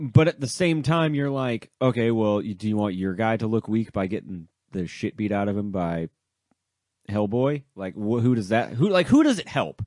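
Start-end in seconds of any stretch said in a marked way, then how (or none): none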